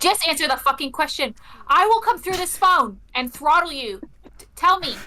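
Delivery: enraged, demanding, furious yelling. Demanding answers over the phone from a confused person: furious shouting. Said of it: "Why are you shouting at me?".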